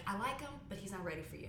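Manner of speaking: plain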